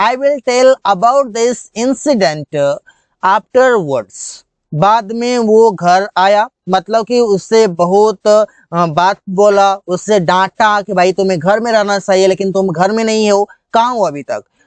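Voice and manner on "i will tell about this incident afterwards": very slow, careful, deliberate English. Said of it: "कैसे बोलेंगे?".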